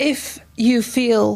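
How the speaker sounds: slow, drawn-out, pleading tone.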